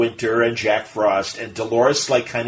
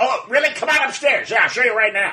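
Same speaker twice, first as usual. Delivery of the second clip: mock excited, all worked up, very high-pitched; 11 semitones higher than usual. Retelling a story where the host gets all excited: imitating an excited Bob Hope. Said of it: "he got all excited".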